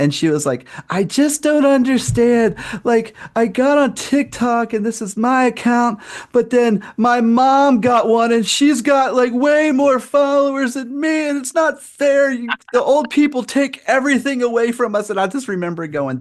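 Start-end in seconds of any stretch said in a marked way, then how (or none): 0.9-15.1 put-on sobbing, very high-pitched, sounding genuinely tearful. Retelling a TikTok video of a girl crying: imitating someone crying. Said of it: "legit crying".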